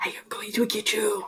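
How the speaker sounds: put-on demonic voice of a child. Retelling what one of the kids running around the house said, demonic voice. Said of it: "in a demonic voice".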